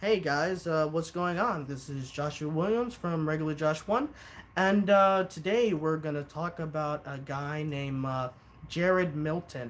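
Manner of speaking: level, lifeless flat monotone. Imitating how the speaker once sounded in early YouTube videos, monotone. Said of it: "I was honestly pretty monotone".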